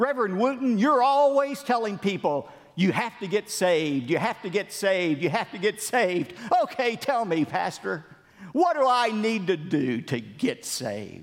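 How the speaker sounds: mocking, sarcastic jab. Preacher retelling a young man's challenge to an evangelist, retelling a sarcastic jab. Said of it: "sarcastically said".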